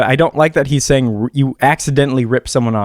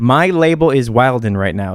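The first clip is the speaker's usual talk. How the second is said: usual speaking voice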